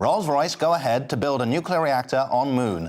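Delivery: retro 1920s American newsreel announcer voice. Co-host reading out a news headline, in a 1920s American newsreel voice. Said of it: "I like that you did the 1920s".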